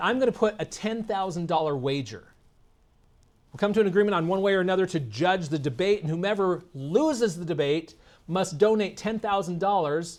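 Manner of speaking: ordinary talk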